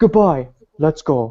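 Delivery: terrible, badly dubbed movie-style delivery. Retelling a scene from a badly dubbed movie: imitating bad movie dubbing.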